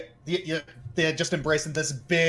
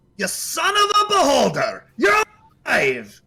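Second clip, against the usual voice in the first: very high, rowdy, swooping, boisterous shout; 10 semitones higher, 6 dB louder than usual. Game master voicing someone calling out from behind the party: boisterous voice. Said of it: "you hear a rather boisterous voice".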